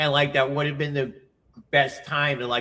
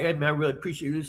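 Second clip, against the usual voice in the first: put-on mumbly speech; 4 dB quieter than usual. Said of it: "he was like".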